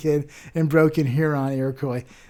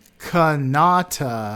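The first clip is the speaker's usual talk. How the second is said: Kanata with stress on middle syllable na. Contrasting kanata with canada, stress middle syllable of kanata. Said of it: "The emphasis is on the middle".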